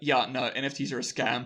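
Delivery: ordinary talk, nothing marked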